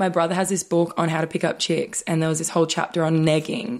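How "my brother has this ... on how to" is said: usual speaking voice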